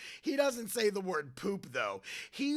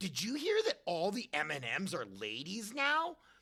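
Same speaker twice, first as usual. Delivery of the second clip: ordinary talk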